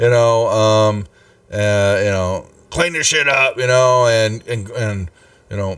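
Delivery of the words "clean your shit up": angry, cross scolding, pitched up. Voicing a bandit heard through a door, yelling at thugs. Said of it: "you hear Holger in there yelling at a couple of dudes".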